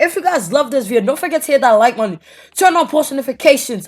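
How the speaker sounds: loud, high-pitched shouting. Closing out a video to the viewers, yelling. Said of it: "I don't know why I'm yelling".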